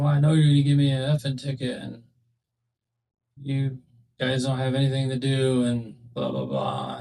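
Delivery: ordinary talk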